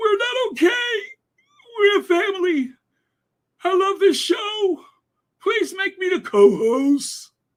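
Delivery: very high, fake weepy crocodile-tears voice. Mocking a TV panelist's tearful speech on air: imitating a deep tearful voice. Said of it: "Her voice got all deep".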